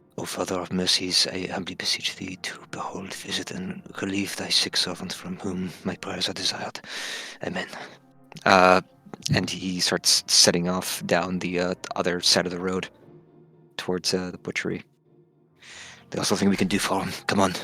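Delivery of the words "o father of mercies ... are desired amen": whispering, much quieter, reverent hushed tone. A character steps behind a corner out of someone's sight and prays: whispered prayer. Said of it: "He whispers a prayer".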